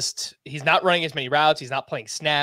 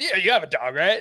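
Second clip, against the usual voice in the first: high-pitched, mock overconfident, totally sure-of-itself tone; 5 semitones higher than usual. Imitating another speaker's guess about a dog: imitating someone saying it confidently. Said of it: "you said that with so much confidence".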